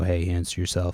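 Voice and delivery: put-on voice of god. Retelling speaking over a little speaker to a girl: retelling a voice of God. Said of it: "voice of God".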